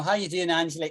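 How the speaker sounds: ordinary talk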